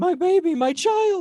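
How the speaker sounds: anguished, very high, drawn-out, panicked shrieking scream. Voicing a wounded mother clutching her belly on the ground: screaming in panic. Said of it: "and screaming".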